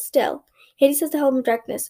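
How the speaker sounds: plain reading voice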